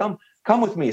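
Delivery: high, grating Southern drawl. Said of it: "that Southern drawl accent".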